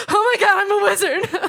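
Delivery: high, loud, giddy squeal breaking into a laugh. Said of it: "And then I went to Harry Potter World and I was like".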